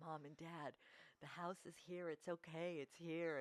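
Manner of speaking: voice wavering with a trembling quiver. Retelling a son's call to his parents after checking the house, imitating a quivering voice. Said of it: "you could just hear the quiver in his voice".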